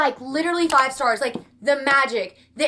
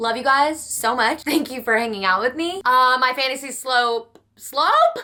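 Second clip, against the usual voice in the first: normal talking voice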